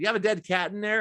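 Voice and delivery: ordinary talk, nothing marked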